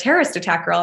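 ordinary talk, nothing marked

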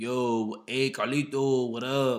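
put-on slight Spanish-speaking accent, very slow and loud. Retelling a coworker's greeting: imitating a coworker saying a name with an accent. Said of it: "he said his name with a little accent".

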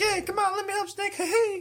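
mocking, very high-pitched voice. Mocking an upbeat character from a game, Chico voice. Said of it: "Chico's like".

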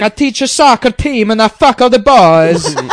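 put-on loud, slow Italian accent with "boys" stretched out. Voicing the man in a joke whom others are jealous of, in an Italian accent. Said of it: "it's like an Italian accent you say".

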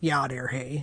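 Upper Michigan accent. Comparing regional accents, demoing an Upper Peninsula Michigan accent. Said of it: "nothing like the Upper Peninsula of Michigan or even Northern Wisconsin".

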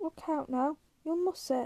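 plain reading voice

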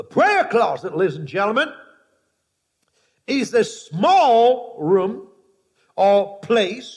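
slow, measured, deliberate, "small" drawn out. Speaker repeating a point to the ladies and gentlemen, said slowly. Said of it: "Let me say it again slowly for you".

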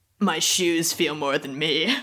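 put-on moody, angsty middle-schooler voice. Joking about what kids write on their shoes, in an angsty middle-schooler voice. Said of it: "that was my other middle school voice".

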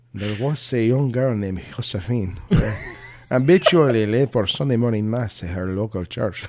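put-on Spanish accent. A host repeats a sentence for listeners, now in a Spanish accent. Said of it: "Now I want to do it in a Spanish accent".

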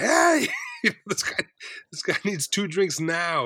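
high, swooping, drawn-out scream. Telling a story about getting a bartender's attention for someone; retelling a scream at a bartender. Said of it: "pretty much screamed at the bartender".

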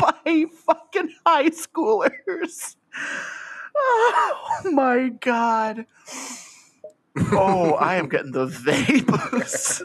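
slow, high, helpless laughter, laughing till crying.

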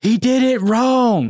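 acted yelling in Southern accent. Retelling a relative yelling from the back during a baptism: imitating a yell in a Southern accent. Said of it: "she yelled up to the front".

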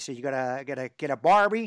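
booming, loud put-on Texan accent. Talking about Texas barbecue, the speaker tries an attempted Texan accent. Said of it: "That was my attempt at a Texan accent there".

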